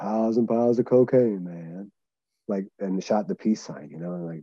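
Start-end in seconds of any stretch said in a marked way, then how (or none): 0.0-1.9 full, exaggerated groovy hippie voice. Retelling what Necro Butcher said when the speaker walked into the house; Necro Butcher groovy hippie voice. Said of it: "with like the grooviest, hippiest voice in the world".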